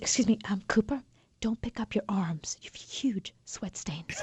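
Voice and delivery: discreet, very quiet, hushed, barely audible whisper. Retelling what the sound lady whispered to him while he fixed his mic, whispering. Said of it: "she whispers".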